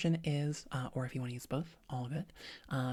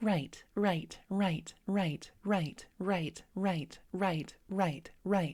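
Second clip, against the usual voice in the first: bright, pleasant, nice voice. Demonstrating repeated listener responses for practice, in a nice bright voice. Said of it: "in that nice bright voice".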